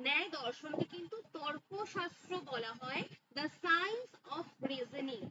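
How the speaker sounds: very slow, spelled-out dictation.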